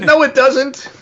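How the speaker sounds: high, loud, upset, indignant objection. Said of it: "everybody got all upset".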